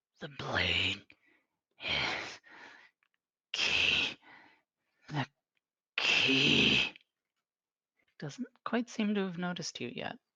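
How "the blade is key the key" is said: very slow, drawn-out, growling monster voice. Voicing a dangling masked creature the players have found: growling creature voice. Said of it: "you can hear it growling".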